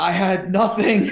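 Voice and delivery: high full-throated scream at the top of the lungs. Retelling how a poker player stood up and threw his cards: imitating someone screaming. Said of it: "he screams at the top of his lungs".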